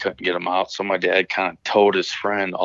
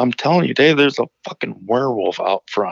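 put-on insistent voice, almost crying, close to tears; 7 semitones higher than usual. Retelling what a man told Dave, the speaker's dad; imitating someone near tears. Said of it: "about to tear up in the face".

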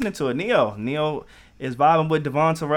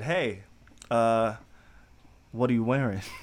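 mock sexy voice, lower and slower; 4 semitones lower, 5 dB quieter than usual. Retelling his first question to her on the phone, put-on sexy voice. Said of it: "I put on my sexy voice".

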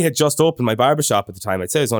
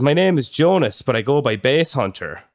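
ordinary talk, nothing marked

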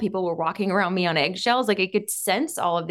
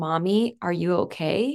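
put-on sweet small child voice, much slower. Retelling her three-year-old daughter asking if she's okay; sweet little child's voice. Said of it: "this sweet little voice of my then three year old daughter going".

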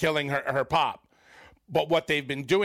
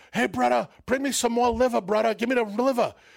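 calling out with voice pitched up high; 8 semitones higher, 3 dB louder than usual. Retelling how Eddie Fatu talked to the waiter, imitating Eddie Fatu ordering liver. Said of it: "that's the way he would talk to the".

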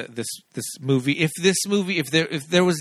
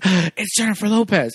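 put-on excited kid voice, pitched higher; 6 semitones higher, 4 dB louder than usual. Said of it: "super excited".

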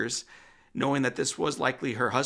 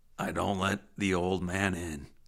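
low, tough-guy voice; 6 semitones lower than usual. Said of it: "in his famously tough guy voice".

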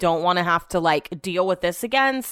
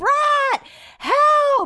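acted out, frightened, nervous scream, very high pitched; 4 dB louder than usual. Recounting a dog running toward them near home, retelling a nervous scream. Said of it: "I'm like screaming because I'm nervous".

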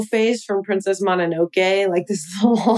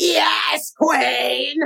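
put-on drunk pop star voice, higher pitched; 7 semitones higher than usual. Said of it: "It's a really good imitation".

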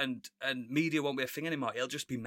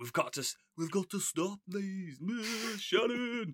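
put-on failed Birmingham accent, higher pitch; 7 semitones higher than usual. Imagining rock stars teaming up in a film: bad Brummie accent. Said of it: "I can't do a Brummie accent".

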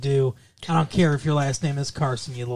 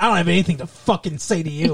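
mock-furious, acted angry outburst; 3 semitones higher than usual. Retelling her reply when the parents say they need to talk, retelling an angry outburst. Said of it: "but she was really mad at her".

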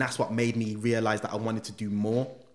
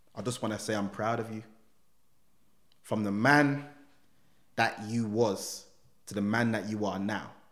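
usual speaking voice

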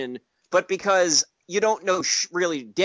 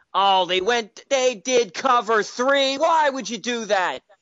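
half-hearted, mild, pitched-up yell; 5 semitones higher than usual. Describing sitting on the couch with Rob Ryan, imitating Rob Ryan yelling at TV. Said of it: "he'll yell at the TV".

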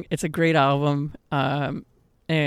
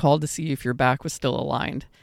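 ordinary delivery

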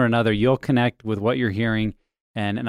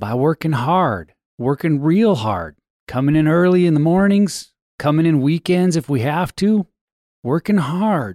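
put-on Texan politician voice, higher and louder; 5 semitones higher, 4 dB louder than usual. Answering with a quoted line, George W. Bush voice. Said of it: "it sounds like you're doing a George W. Bush, like, voice".

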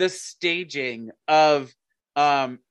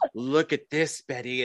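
put-on creepy voice, quieter; 3 semitones lower, 4 dB quieter than usual. Speaker retells a Riverdale scene to a friend, creepy Dr. Curdle Jr. voice. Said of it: "he has that creepy voice".

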